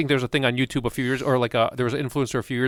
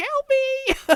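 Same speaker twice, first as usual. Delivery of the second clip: very high, desperate pleading tone. Retelling an old woman's call to the police: imitating a desperate cry for help. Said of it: "you can hear this old woman on the phone with the police".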